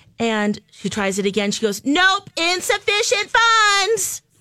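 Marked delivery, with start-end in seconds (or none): 1.9-4.2 piercing, shrill, very high scream. Retelling how a cashier announced a declined card: imitating a cashier screaming. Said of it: "And she's screaming this".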